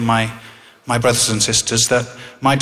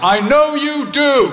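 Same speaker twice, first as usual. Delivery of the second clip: loud, raised, very high-pitched voice; 14 semitones higher, 3 dB louder than usual. Leaving the hospital ward, the speaker retells what dad said: retelling dad's loud reply. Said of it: "in a loud voice".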